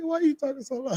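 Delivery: high, fast, incredulous tone. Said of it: "I'm like".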